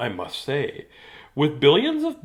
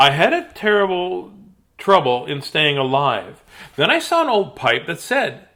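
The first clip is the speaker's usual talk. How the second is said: plain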